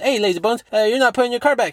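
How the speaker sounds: very high, very fast rapid-fire patter. Retelling how a man confronts people, imitating him talking really fast. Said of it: "he talks really fast".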